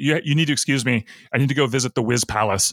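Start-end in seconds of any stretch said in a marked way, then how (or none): none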